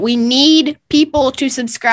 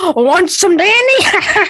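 higher put-on brawler character voice; 8 semitones higher than usual. Answering a request for a Dynamite impression. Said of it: "you do a Dynamite, uh, impression".

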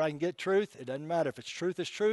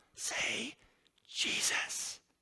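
hoarse, raspy, almost demonic whisper; 7 semitones higher, 5 dB quieter than usual. Retelling how a lady stood inches from a man's face: raspy, almost demonic voice. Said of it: "in a raspy, almost demonic voice".

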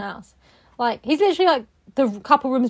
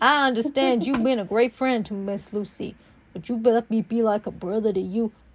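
terrible, bad put-on Texas accent. Acting out a character's line while recapping a story, in a bad texas accent. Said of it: "That was a terrible Texas accent".

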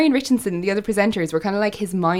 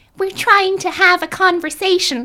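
very high, drawn-out, sassy drawl; 10 semitones higher than usual. Retelling Bosco answering growling tigers mid-interview: sassy Bosco voice. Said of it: "really, really sassy".

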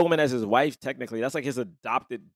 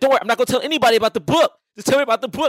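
very high, loud, hyped blurting yell; 11 semitones higher, 8 dB louder than usual. Retelling a character's line about the book: imitating someone loud and hyped. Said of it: "she's mad hype the entire time".

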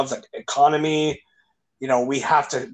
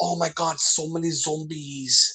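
put-on Filipino accent; 2 semitones higher, 4 dB quieter than usual. A speaker quotes a woman at his work reacting to him, imitating a Filipino accent. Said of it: "in her Filipino accent".

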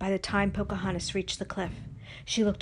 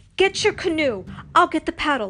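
loud, high-pitched shouting; 7 semitones higher, 7 dB louder than usual. Narrator voicing Pocahontas calling to Nakoma during the canoe race, yelling. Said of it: "Pocahontas yelled".

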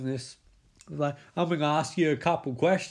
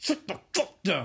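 acted, fed-up, frustrated, exasperated tone. Recapping a scene, the speaker acts out a woman's line, mock-frustrated command. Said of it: "she says in frustration".

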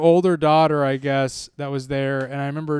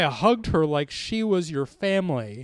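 usual speaking voice

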